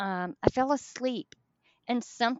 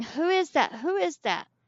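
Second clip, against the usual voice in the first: put-on, pitched-up, mild half-screamed yell; 5 semitones higher than usual. Telling of being dragged off a hotel bed, retelling own screaming. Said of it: "I'm screaming".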